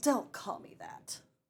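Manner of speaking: haughty regal character voice. Trying out a voice for her character, regal and haughty. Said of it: "seems regal and haughty".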